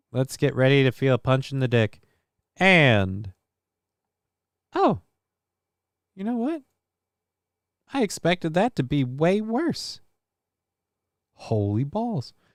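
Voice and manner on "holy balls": soft voice breaking and cracking on the exclamation. Reacting after expecting something to hurt way worse, voice cracking. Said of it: "And voice crack".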